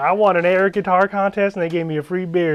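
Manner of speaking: put-on country twang. Retelling what a man said in an interview, imitating a country twang. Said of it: "he's got a country twang".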